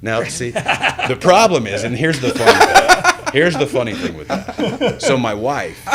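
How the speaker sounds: loud, high-pitched laughing through the words.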